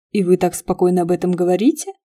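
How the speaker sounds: ordinary delivery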